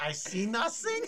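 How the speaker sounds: very high-pitched, loud German officer voice. After a Freud voice gets compared to Colonel Klink, answer in a Colonel Klink voice. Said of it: "that's Colonel Klink".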